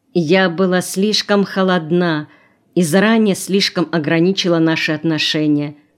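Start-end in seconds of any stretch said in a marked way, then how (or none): none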